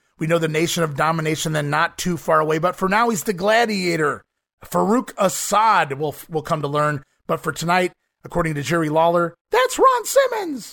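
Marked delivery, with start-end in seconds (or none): 9.5-10.7 very high-pitched announcer call, pitched way up. Recapping a wrestling debut, imitating Jerry Lawler's high-pitched voice. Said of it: "my best Jerry Lawler impersonation".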